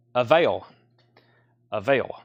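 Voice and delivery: low Tennessee accent, heard on "avail". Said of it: "I'm sounding very Tennessean".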